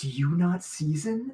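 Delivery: whispering under breath. Speaking in character as an aside to another character, whispering under breath. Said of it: "I just whisper under my breath".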